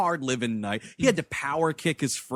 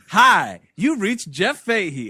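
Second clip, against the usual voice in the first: put-on happy-go-lucky smart-ass voice; 3 semitones higher, 6 dB louder than usual. Retelling a recorded answering machine message: imitating a smart-ass happy-go-lucky message. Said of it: "this smart-ass thing where he's like".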